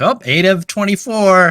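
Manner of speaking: mock cheerful, cheery exclamation.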